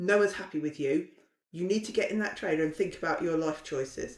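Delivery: ordinary talk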